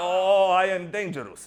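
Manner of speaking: put-on Polish accent. Retelling what a dangerous-looking man said to him, in a Polish accent. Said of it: "English in a Polish accent".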